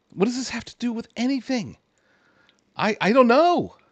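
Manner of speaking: high, whiny, ranty grumbling, pitched way up. Addressing viewers about a confusing news report, whiny and ranty. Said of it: "I hate to sound all whiny and ranty".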